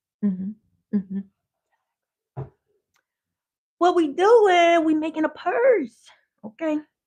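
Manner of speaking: high, swooping voice. Showing viewers how to make a purse, in the Sean alter-ego voice. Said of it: "So when I be talking like that".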